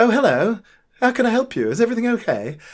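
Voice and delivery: put-on RP accent. Retelling a sitcom scene about a lookalike checkout worker, imitating an RP accent. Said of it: "she's got an R P accent".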